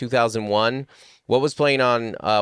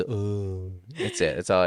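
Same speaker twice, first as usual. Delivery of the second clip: put-on soft, slow, laid-back, unbothered teenage boy murmur; 3 semitones lower, 6 dB quieter than usual. Showing their impression of a teenage boy: imitating a chill teenage boy. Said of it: "our impersonation of a teenage boy is".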